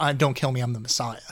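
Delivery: ordinary delivery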